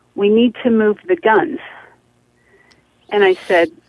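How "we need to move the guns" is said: plain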